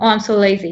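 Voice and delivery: ordinary talk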